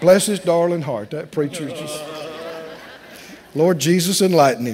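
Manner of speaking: low, laughing, mock, fake-pitying tone.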